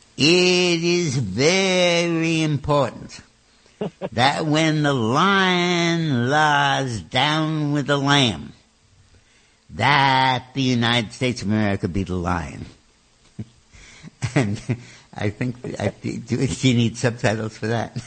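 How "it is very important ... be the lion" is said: loud Texas drawl, the word "lion" stretched out. Quoting a senator's remark to listeners, in his big, wonderful texas drawl. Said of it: "In his big, wonderful Texas drawl".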